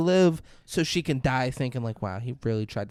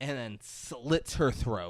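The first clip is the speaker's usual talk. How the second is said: ordinary delivery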